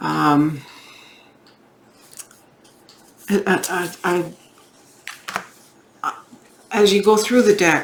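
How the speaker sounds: stammering and stuttering. Going through a tarot deck and explaining the cards, stammering and stuttering. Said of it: "I'm stammering and stuttering here".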